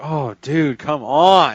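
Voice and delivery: put-on high, very slow, let-down, upset complaint. Retelling how a man reacted when Sean laughed; mock-upset. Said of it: "he's so upset with him".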